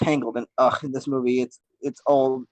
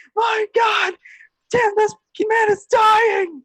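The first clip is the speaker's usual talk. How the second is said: very high, loud, play-acted shrieking panic; 5 dB louder than usual. Recalling a film scene, quoting Pikachu on the balcony: screaming Pikachu impression. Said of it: "Pikachu's sitting there screaming".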